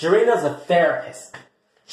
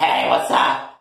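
rough, creaky character voice, "hello" rasped; 4 semitones lower than usual. Showing how the skit character Raniqua sounds: Raniqua's voice. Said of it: "Raniqua sounds like this".

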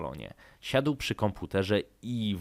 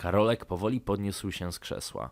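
ordinary delivery

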